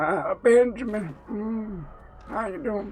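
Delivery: put-on high, slow old witch voice, drawn out. Joking about Benjamin Button, mocking Cate Blanchett sounding like a granny witch. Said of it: "just sounding like Granny Witch over here".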